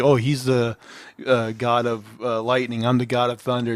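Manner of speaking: ordinary talk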